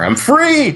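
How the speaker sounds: belted out, high and joyful.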